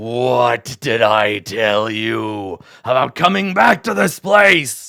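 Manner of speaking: very low, deep snarling dragon voice. Game master voicing a gold dragon speaking to the players, snarling Oranax dragon voice. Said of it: "he snarls".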